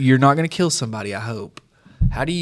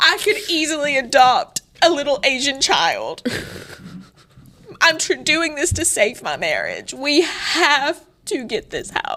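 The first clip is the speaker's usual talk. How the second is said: fake tearful, crying pleading tone; 14 semitones higher than usual. Acting out a plea to homeowners after being told to cry: put-on crying plea. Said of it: "You gotta start crying".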